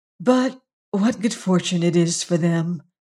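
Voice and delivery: softly murmuring, quiet. In a narrated story, a woman murmurs her thought aloud. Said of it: "she murmured".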